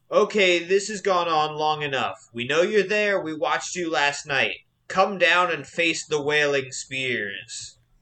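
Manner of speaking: big, grand, proclaiming voice. Narrating a scene, the speaker voices an unseen figure calling down to the hillock: big booming voice. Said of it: "a big booming voice says".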